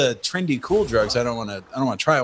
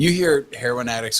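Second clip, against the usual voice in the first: ordinary talk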